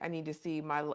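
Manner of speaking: ordinary talk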